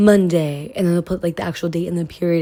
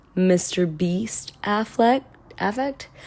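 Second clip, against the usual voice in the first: usual speaking voice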